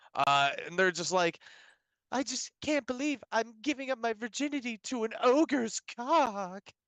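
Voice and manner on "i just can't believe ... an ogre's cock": put-on breathy dub voice, pitched higher. Retelling a scene from a lame english dub: imitating a breathy dub voice. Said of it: "the women with the breathy voice".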